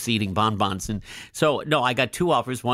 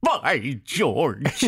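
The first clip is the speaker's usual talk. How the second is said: put-on cartoon-style old-man voice, exclaimed; 3 semitones higher than usual. Recalling a nearsighted cartoon character: Mister Magoo voice. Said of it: "the cartoon character, you know, Jim Backus".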